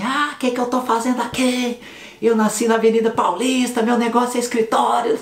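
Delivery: put-on shrill shouting, very high pitched. Recounting how one of two arriving girls turned around: imitating a girl shouting. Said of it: "uma delas virou gritando assim".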